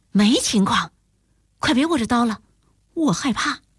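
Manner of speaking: ordinary delivery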